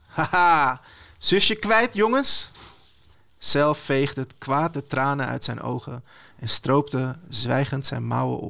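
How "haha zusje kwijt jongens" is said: smug, teasing gloating taunt, pitched up. Croc, leaning on his motorbike across the bridge, taunts the boys; grinning.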